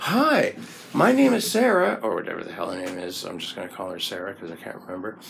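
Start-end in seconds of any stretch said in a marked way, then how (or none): 0.0-2.0 bright, chirpy, very high-pitched, slow American voice. Speaker retells pressing an intercom button and hearing a woman answer: chirpy female American voice. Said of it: "this chirpy female American voice".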